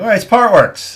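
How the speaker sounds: laughing, high, loud mocking jeer. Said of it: "he's gonna be laughing, going".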